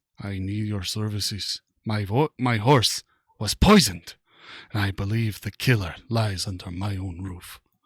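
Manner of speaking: quietly menacing, low, hushed, dangerous voice. Reading a scene aloud, a character phoning an inspector: low, dangerous voice. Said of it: "his voice low and dangerous".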